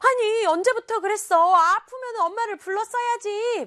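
high, loud, worried, pitying reproachful tone.

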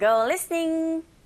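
go listening stretched out slowly.

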